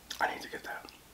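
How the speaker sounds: speaking in a whisper. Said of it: "Why am I whispering?".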